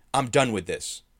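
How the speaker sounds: loud, snarled delivery. A warrior draws his swords and lunges at a companion, snarling. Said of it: "Ivor snarled".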